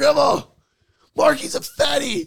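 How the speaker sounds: very high, unhinged, out-of-control rant. Retelling a chaotic scene at grandma's, imitating Keegan losing his mind. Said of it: "Keegan loses his mind".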